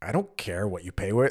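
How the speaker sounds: irritated, pissy, angry snapping tone. Retelling what the cashier said when asked about paying by card: imitating a pissy angry cashier. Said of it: "really pissy, just, like, a-, angry at me".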